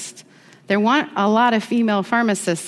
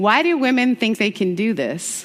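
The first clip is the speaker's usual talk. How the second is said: put-on heavy, broad Southern accent, laid on thick. Retelling what a seminary classmate said: imitating a thick Southern accent. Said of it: "the most Southern accent you've ever heard".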